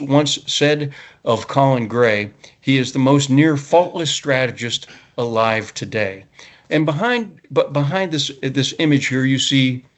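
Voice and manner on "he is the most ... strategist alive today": plain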